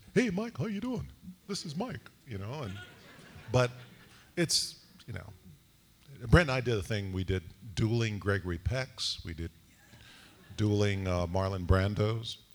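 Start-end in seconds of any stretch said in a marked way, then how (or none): 0.1-2.1 voice pushed very high in pitch. Retelling a friend calling up in his voice: imitating a friend doing his voice. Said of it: "he was like".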